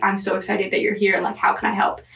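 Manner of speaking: ordinary talk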